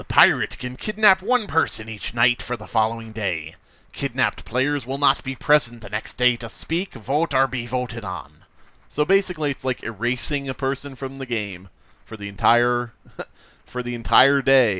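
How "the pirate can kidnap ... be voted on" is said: pirate-style reading voice. Reading the pirate role's rules aloud for viewers, in pirate voice. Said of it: "I'll read it in this voice just for you".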